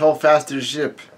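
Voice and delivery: plain reading voice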